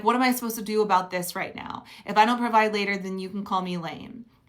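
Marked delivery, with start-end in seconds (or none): none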